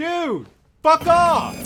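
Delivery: high-pitched, loud, furious yell.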